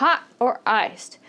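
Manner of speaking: pitch rises on hot, falls on iced. Teaching choice-question intonation, rise on hot, fall on iced. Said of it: "The intonation is going up on the first option and then down on the second option".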